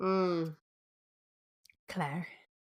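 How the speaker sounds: put-on Scottish accent. Dropping into a voice after being teased about accents: Jamie voice. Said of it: "There it is. See, already doing it".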